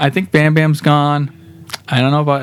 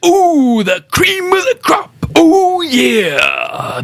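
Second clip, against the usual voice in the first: very high, swooping, drawn-out, swinging promo-style delivery; 13 semitones higher than usual. Listing wrestlers on a game cover, then doing a Randy Savage impression. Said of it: "my Randy Savage impersonation".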